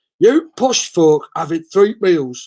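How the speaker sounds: put-on northern English accent. Reading someone's message aloud: northern English accent. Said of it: "I have to do it in a northern accent".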